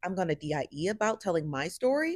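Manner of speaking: normal talking voice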